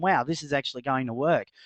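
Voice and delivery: ordinary talk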